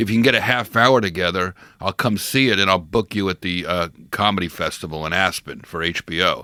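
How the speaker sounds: normal talking voice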